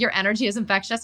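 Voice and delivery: ordinary talk, nothing marked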